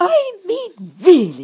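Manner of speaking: very loud, very high, shrill, swooping, furious, indignant. The narrator, struggling with sticky tape, exclaims, fuming. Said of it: "I exclaimed".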